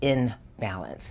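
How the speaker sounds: in of "in balance" stressed and slow. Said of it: "Not in balance, in balance".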